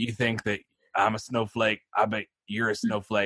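put-on rough, gravelly backwoods hillbilly accent. Retelling a threatening voicemail a brother received, in a gravelly hillbilly voice. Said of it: "gravelly hillbilly voice".

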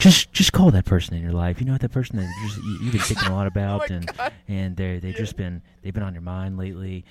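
gentle, close radio host tone. Imitating a radio host who gets close to the mic: Delilah radio voice close to mic. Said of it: "She gets really close to the mic and she goes".

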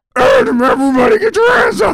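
high, loud puppet-style voice. Retelling what a man told everybody, in a Grover voice. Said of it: "He sounded like Grover from Sesame Street".

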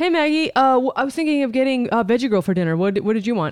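hesitant, halting, stumbling, casual, friendly, with fillers. Acting out a role play, imitating the other speaker: imitating the other speaker. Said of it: "That was my impression of you".

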